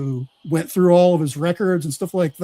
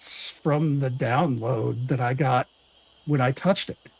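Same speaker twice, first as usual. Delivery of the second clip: acted bashful, sheepish, meek tone; 4 semitones lower, 4 dB quieter than usual. Retelling his answer in an interview about the notebook, imitating a sheepish reply. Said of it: "sheepishly said".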